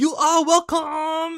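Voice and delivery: very high, very loud, shrill broken-English yell. Describing a Yakuza game, the speaker imitates a guy's shout in broken English. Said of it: "shouts like".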